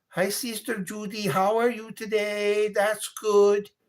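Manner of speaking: put-on lilting Caribbean accent. Imitating a woman greeting sister Judy, imitating a Caribbean accent. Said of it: "sounds like she's from that area".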